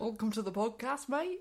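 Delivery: Yorkshire vowels with an Australian lilt. Copying the other speaker's podcast greeting in a Yorkshire-Australian accent. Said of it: "A bit Australian".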